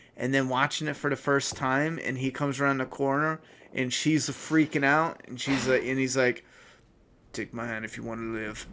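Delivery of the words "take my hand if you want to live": very quiet, soft, clumsy, badly done movie-robot voice. Recalling watching Terminator for the first time, bad Terminator impression. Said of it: "that was a bad impression".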